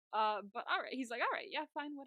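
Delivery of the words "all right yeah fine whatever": put-on dismissive, reluctant tone, pitched higher. Retelling how a father tries to move past the argument: imitating a dismissive brush-off. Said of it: "just move past it a little bit".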